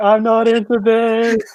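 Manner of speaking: high, slow mock scream. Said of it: "while screaming".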